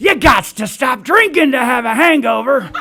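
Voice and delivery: loud, high shout carrying across a room. Speaker retells another old guy shouting at the meeting: imitating an old man yelling. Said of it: "this other old guy over here starts yelling".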